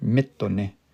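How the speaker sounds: stress on mi in mitone. Explaining where stress falls in a word: stress on first syllable of mitone. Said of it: "a raised pitch in my voice there".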